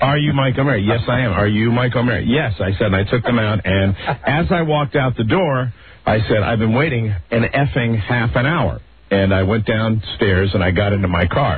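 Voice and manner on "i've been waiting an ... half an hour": usual speaking voice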